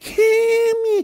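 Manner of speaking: very high, stretched, drawn-out scream. Narrating a game, the speaker acts out him retelling a scream for help. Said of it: "He's screaming".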